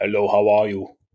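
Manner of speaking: put-on Austrian-accented speech. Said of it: "the only guy in Minneapolis with that accent".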